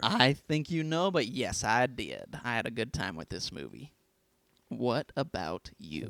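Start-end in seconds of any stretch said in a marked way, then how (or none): 1.1-6.1 sudden Southern accent with a drawl. Answering whether they had fun with the movie: Southern accent. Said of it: "Why did you just go Southern all of a sudden?".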